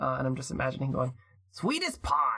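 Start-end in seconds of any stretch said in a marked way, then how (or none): 1.5-2.4 mildly grumbly comic character voice, tossed off. Trying out a voice after being asked for one: Danny DeVito voice. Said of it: "I'm trying to imagine his voice from Matilda".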